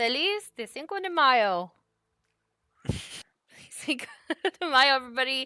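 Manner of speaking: words broken up by giggling. A host amused by a video shown to the group, giggling while speaking. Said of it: "I'm now giggling".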